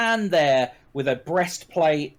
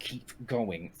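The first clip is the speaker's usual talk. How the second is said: through gritted teeth, much lower, quieter; 6 semitones lower, 12 dB quieter than usual. A paladin turns to a nearby cultist and speaks through gritted teeth. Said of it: "through gritted teeth".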